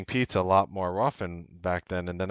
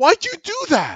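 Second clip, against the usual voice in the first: very high, very loud, shrill, shocked anger; 9 dB louder than usual. Speaker retells confronting a woman who flushed a diamond bracelet: retelling angry, shocked dismay. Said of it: "Like angry and shocked and in utter dismay".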